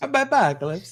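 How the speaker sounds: put-on Italian pizza chef accent. Saying the phrase again as the accent keeps shifting, in an italian pizza chef accent. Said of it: "now it's getting more Italian pizza chef".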